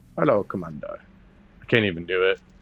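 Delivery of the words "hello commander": put-on Russian accent sound. Imitating a character greeting the Commander: Russian accent. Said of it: "I like that like Russian accent sound".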